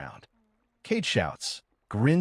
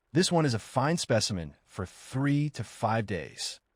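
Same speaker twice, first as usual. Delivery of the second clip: normal talking voice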